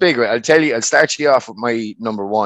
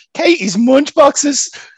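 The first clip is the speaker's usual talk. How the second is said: put-on Irish boxer voice, pitched higher; 13 semitones higher than usual. Imagining a boxer announcing retirement after a fight: Katie Taylor impression. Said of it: "Your impression of her is so funny".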